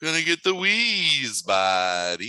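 high, slow Southern California drawl. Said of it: "He talked like this".

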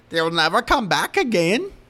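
loud horror-villain voice, pitch swooping up and down. Quoting the old woman's warning line: Leprechaun voice. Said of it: "That sounded like the Leprechaun".

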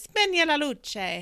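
spoken in Italian. Speaker repeats a woman's Italian command to them, imitating her Italian command. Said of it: "I was just imitating her".

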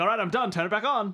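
ordinary talk

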